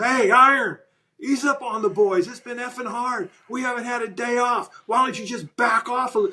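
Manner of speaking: put-on yelling. Retelling how the quarterback yelled at the coach in camp: imitating someone yelling. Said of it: "he screams at Mike and yells".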